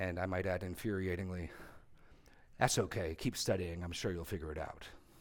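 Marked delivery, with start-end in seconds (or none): 2.6-4.8 put-on smug, patronizing, reassuring tone. Retelling what a man said during an argument, mock-patronizing. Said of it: "he said very patronizingly".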